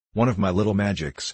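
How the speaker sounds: ordinary delivery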